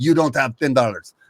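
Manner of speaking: clumsy, badly done put-on Russian accent. Retelling what a man said when the speaker had only twenties, bad russian accent. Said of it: "Sorry about my Russian accent".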